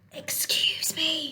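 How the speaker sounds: hushed, soft, quiet whispered little voice. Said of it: "said a quiet voice".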